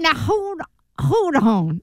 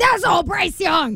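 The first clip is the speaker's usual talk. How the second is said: high, shouted angry rant. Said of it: "someone was like".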